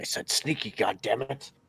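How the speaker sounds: muttered, under the breath. Voicing Zara in the game, cursing under his breath. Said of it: "curses under his breath".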